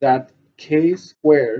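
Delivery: "K squared" stressed, very slow and loud. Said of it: "Emphasis on the K squared".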